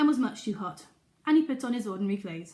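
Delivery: plain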